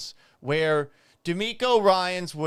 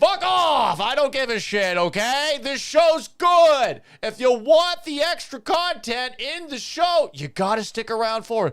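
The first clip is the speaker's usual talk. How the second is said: loud, high, angry yelling tirade; 8 semitones higher, 6 dB louder than usual. Answering a complaint about the show's late start time, angry yelling. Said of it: "why are you yelling at me?".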